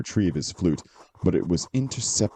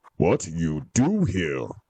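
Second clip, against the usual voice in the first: slow, growling brute voice with broken speech. Narrating a Brogue repeating its question to Milo, growling voice. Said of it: "the Brogue growled".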